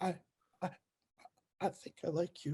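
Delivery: very quiet, halting, timid, stammering whisper. Mocking how he talks to Mary Jane, imitating Peter Parker's timid whisper. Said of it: "everything came out like a whisper".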